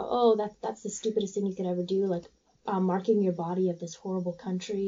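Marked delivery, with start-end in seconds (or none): none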